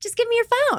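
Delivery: light, playful, very high-pitched tone. Retelling what they said just before a big fight, retelling a playful request. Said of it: "so playful".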